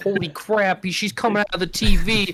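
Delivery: drawn-out cartoon-dad exclamation. Imagining a cartoon reaction to someone crawling out of a TV: Peter Griffin impression. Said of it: "Peter Griffin be like".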